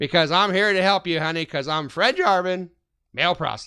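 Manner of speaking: put-on high-pitched Chicago accent. Retelling a man dressed like a sixty-year-old dad, Fred Jarvin's Chicago accent. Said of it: "he talked like he was from Chicago, and he just talked like this".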